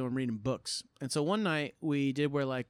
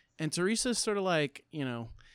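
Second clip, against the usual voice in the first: ordinary talk, nothing marked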